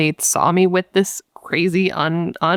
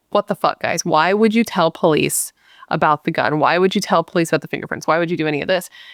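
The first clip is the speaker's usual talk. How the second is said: put-on upset, ranting voice. Retelling a call to friends after an interrogation: imitating someone upset. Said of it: "he's all hyped up and he's upset".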